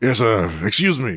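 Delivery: character voice, about to cough. Voicing the player character again, calling to a deckhand: sounds about to cough. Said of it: "Give it, give it a chance".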